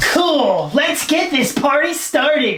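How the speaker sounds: upbeat new character voice, fully in character. Playing a new skit character welcomed to answer questions: Terrence character voice. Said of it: "please welcome the newest character in the Tone France universe, Terrence".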